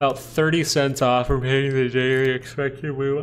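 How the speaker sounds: talking through a yawn. Talking viewers through Google's daily expected move; yawning while talking. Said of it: "I'm so sorry about the yawning".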